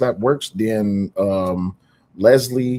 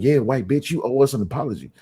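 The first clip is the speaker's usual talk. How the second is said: pushy, insistent, confrontational demanding tone; 3 semitones higher than usual. Contrasting how demanding would sound: imitating someone demanding. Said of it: "I could see demanding".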